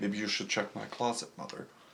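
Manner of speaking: creepy, soft murmured voice, put-on.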